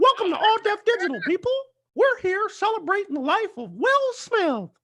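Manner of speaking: squeaky, very high, sing-song delivery. Asked by a friend to do the Mickey again, Mickey Mouse voice. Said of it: "do the do the Mickey again".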